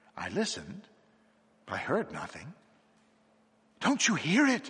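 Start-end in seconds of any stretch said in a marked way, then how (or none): 3.8-4.7 very high, gasping, breathy voice. In a read story, a man points upward and speaks to the narrator, gasping. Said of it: "he gasped".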